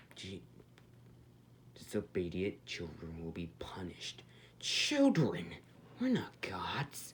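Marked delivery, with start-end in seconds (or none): 0.2-4.2 deep, very hushed, low and very soft. Relaying lines between two versions of Batman, speaking in Regime Batman voice. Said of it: "Regime Batman says this".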